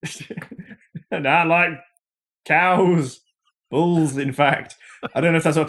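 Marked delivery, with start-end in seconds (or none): 1.1-4.7 high, slow, stretched-out mock voice. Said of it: "my Peter Molyneux impression".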